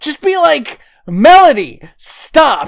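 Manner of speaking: loud, slow, exasperated yelling. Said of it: "I was like".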